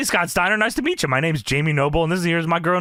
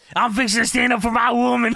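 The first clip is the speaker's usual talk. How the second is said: angry, fired-up, furious outburst, pitched up; 6 semitones higher than usual. Retelling a wrestler's promo to another speaker: imitating a furious Jamie Noble. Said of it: "He's fucking pissed. He's flipping out".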